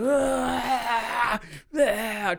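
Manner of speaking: mock high, strained power-up yell.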